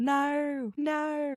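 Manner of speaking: terrible fake Australian accent, pitched very high. Guessing what a heard word was, the speaker says it in a really terrible australian accent. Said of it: "A really terrible Australian accent".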